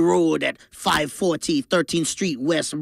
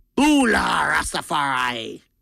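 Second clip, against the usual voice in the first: sing-song, swooping, pirate-flavored voice. Reading an ad for a kava club, slipping into a pirate-like voice. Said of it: "That one sounded like a pirate in there".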